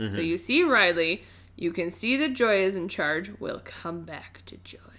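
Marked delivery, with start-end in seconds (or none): 3.4-4.8 menacing, much quieter. While discussing Riley and Joy, the speaker sets a topic aside: menacing. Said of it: "That was menacing".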